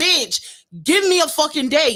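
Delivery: very high, stretched-out, drawn-out yell. Retelling a car's warning light: imitating herself yelling at her car. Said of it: "I started yelling at my car like".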